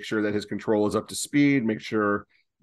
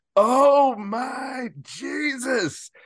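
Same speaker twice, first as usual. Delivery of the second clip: very high shout at full blast, full-lung; 3 dB louder than usual. Retelling a teammate's outburst at a foul smell, retelling a top-of-lungs shout. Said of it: "just goes at the top of his lungs".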